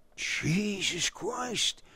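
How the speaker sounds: hushed, soft, breathy whisper under the breath. Narrator reading Buckhammer's reaction to the news; whispered. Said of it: "whispered Buckhammer".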